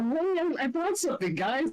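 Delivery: very high-pitched, cheerful voice. Voicing Kaede coming back in with something: in character as Kaede. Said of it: "she's gonna come back in and go".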